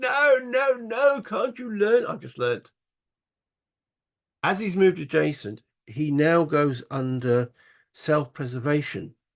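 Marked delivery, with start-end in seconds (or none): 0.0-2.1 high-pitched mock yell, like a scream. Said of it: "is screaming at the screen going".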